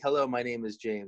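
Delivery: normal talking voice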